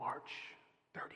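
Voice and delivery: secretive whisper, barely voiced, soft and breathy. Retelling how a man whispered the dream voice's answer: retelling a furtive whisper. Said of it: "he whispered to him".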